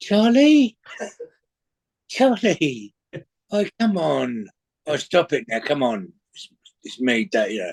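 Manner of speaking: put-on, swooping South London gangster accent. Retelling their answer shouted out the window, in a south london gangster voice. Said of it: "I did my best South London gangster voice".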